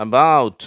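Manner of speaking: stress on the second syllable of "about". Showing English word stress on the second syllable; stress on the second syllable. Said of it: "ரெண்டாவது சிலபலில் stress இருக்குது".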